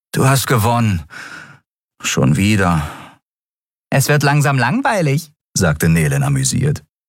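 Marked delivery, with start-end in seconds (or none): 0.1-2.8 resigned and defeated, sighing. Narrator reads a card player conceding the game, resigned. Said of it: "seufzte er resigniert".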